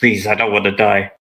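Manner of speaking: pleading, begging, imploring. Game master voicing a surrendering enemy who pleads with the players; pleading. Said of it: "just pleads with".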